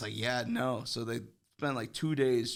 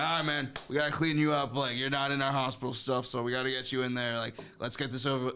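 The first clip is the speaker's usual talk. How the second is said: annoyed, fed-up, irritated, grudging tone; 2 semitones higher than usual. Speaker retelling what a man at the hospital told him, imitating a pissed-off guy. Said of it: "He was like pissed".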